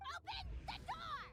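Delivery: very high, shrill, demanding yell. Someone outside a door demanding to be let in, yelling. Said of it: "Stop yelling".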